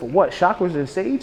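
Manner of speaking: ordinary delivery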